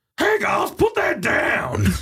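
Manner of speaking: very high put-on voice with swooping pitch. Performing your weekly impression after talking about the Batman film, Bane impression. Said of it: "Here's my weekly Bane impression".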